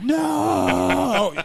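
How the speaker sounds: put-on raw, raspy, very high scream. Retelling a wrestler holding an opponent at the end: imitating someone screaming. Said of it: "he was screaming like".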